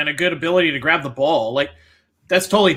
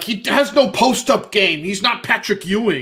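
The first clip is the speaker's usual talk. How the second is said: put-on thick New York accent, higher pitch; 5 semitones higher than usual. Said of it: "the thick New York accent that hated Steph Curry".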